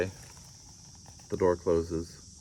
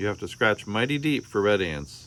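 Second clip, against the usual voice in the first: plain reading voice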